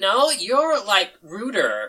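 very slow, drawn-out, high sing-song voice that swoops. Voicing Bryn answering Zoe: Bryn voice. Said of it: "Bryn just kind of looks back and is like".

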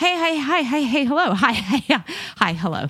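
giddy, high-pitched, excited burst of words. Describing how excitement when starting to date comes out: imitating own excitement. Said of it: "my excitement kind of comes out as".

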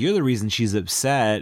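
ordinary talk, nothing marked

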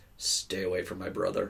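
mock really deadpan, flat, zero-expression delivery. Retelling how a friend answered a classmate, imitating a deadpan reply. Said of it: "Just like really deadpan".

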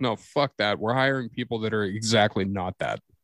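ordinary talk, nothing marked

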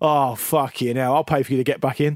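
acted mock-sarcastic jibe. Recalling what the goalkeeper would say after a mistake: retelling sarcastic jibe. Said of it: "he would have a go at you if you made a mistake in a really sarcastic way".

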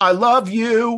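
put-on high, shrill, hollering drunken yell. Retelling a drunk audience member yelling at actors: imitating a drunk man yelling. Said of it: "he yelled".

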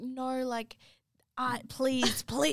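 play-acted desperate begging, very slow and drawn-out. Retelling begging to be allowed to pay: retelling own begging. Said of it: "I was literally begging".

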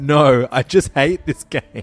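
sobbing, frustrated, loud, drawn-out tearful wail. Retelling how he answered when asked if he wanted to stop playing: retelling a tearful yell. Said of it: "burst into tears and started yelling".

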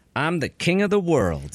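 ordinary talk, nothing marked

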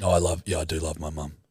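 low, dead-level, flat monotone. Imitating own self-conscious phone call voice: imitating own monotone phone voice. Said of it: "It's like this monotone".

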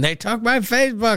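high-pitched, mild yell. Imitating a mom yelling at a reporter: imitating someone yelling. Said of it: "she's yelling at a reporter".

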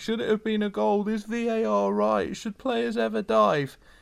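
high, clueless, mocking fan voice. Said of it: "While we're swilling around thinking".

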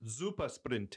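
words pronounced the German way, with German accent. Showing how the name Super Sprint sounds German, German accent on Super Sprint. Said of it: "If you say it like this, Super Sprint, then it sounds German".

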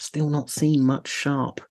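sheepish, apologetic, mock-secret stage whisper. Confessing something to the group, in a whisper. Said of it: "I'll whisper it".

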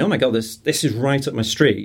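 usual speaking voice

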